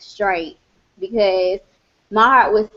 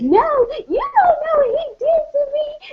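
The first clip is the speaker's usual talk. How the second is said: very high-pitched, blubbering boo-hoo crying and sobbing. Retelling her past self answering a woman urging calm, imitating boo-hoo crying. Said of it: "I was like crying, like boo-hoo crying".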